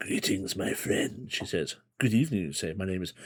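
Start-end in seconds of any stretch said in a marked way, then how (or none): 0.0-1.3 put-on husky, soothing voice with Eastern European accent. Narrator voices a woman at a fire greeting the listener, husky Eastern European accent. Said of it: "speaks to you in a very husky yet soothing Eastern European accent".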